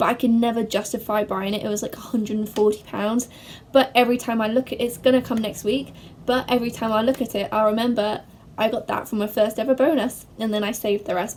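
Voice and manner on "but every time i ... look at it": fast, rushed, rattled-off delivery. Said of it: "I spoke a bit fast then".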